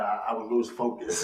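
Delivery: plain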